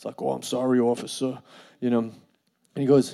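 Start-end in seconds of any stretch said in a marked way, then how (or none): 0.2-1.4 put-on Long Island accent. Acting out their past self answering a police officer, in a real heavy Long Island accent. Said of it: "like a real heavy Long Island accent too".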